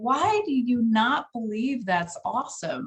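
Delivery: put-on sarcastic tone, slow drawl. Retelling a reply to people who downplay their achievements: imitating own sarcastic remark. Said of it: "I'm being sarcastic".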